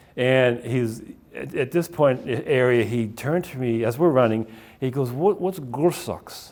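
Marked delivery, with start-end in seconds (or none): 5.4-6.6 put-on heavy German accent, laid on thick, soft. Retelling a run, the speaker quotes a fellow runner from Germany: thick German accent. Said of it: "Had this thick German accent".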